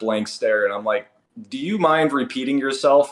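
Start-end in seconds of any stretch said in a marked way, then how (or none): 1.5-3.1 put-on incredulous tone, much higher pitch. Retelling his reply to a man's muttered remark, in a put-on incredulous tone. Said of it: "I kind of say it with that tone".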